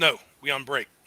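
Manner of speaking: orc character voice. Voicing an orc refusing the party a drink: voicing an orc. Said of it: "Boss says".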